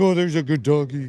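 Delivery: mock talking-to-a-dog voice. Retelling what a man says on seeing a dog, in dog talk voice. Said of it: "turn into dog mode and talk like like that".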